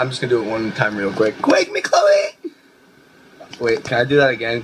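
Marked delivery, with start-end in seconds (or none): 1.4-2.5 very high voice cracking into a squeaky break. Addressing fans, saying the catchphrase just once, voice cracking. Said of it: "my voice cracked and I'm embarrassed".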